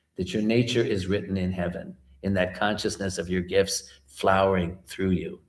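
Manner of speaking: ordinary talk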